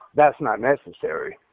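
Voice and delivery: ordinary talk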